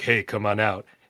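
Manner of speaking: put-on creepy man's voice. Retelling a man calling out to a young girl, creepy man's voice. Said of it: "And then like this man's voice doing".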